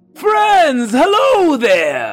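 loud booming shout. Narrator voicing the king waving at the party from the distance: King Terminus booming yell. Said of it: "yelling with a booming voice".

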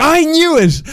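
high, loud, triumphant shout.

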